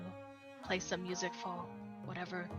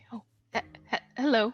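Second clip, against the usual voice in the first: nervous, louder and faster; 3 semitones higher, 7 dB louder than usual. In a role-play scene, being introduced to two strangers and greeting them: nervous. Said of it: "I kind of nervously smile before finally saying".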